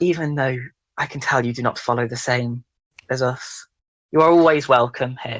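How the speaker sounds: hushed whisper. Narrator voicing a woman leaning in to a listener's ear, whispering. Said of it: "she sort of whispers into your ear".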